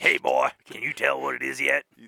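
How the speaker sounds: loud, rough, pushed-out put-on voice. Joking about what prisoners would say, in a Mister T voice. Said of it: "that's my Mister T, Eddie Murphy".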